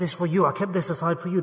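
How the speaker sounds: put-on quiet secretive tone. Acting out a mother secretly giving a favoured child food, acting out a quiet secret aside. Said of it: "then quietly or secretly she'll give him some food".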